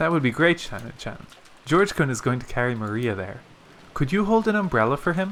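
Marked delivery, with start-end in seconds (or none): none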